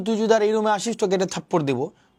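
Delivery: ordinary talk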